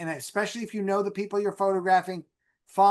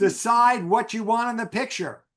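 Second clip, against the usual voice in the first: firm, emphatic, insistent delivery; 3 semitones higher than usual. Naming the biggest mistake people make taking photographs: said very loud. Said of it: "I'm gonna say it very loud".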